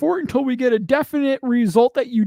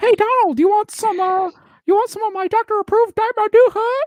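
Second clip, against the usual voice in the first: high-pitched cartoon mouse character voice; 8 semitones higher than usual. Mocking someone by talking to Donald as him: Mickey Mouse voice. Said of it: "Bro sounds like Mickey Mouse".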